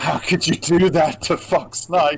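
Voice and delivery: high, accusing female voice. Voicing a woman who appears beside a player: voicing an accusing woman. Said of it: "just 'cause I can show you".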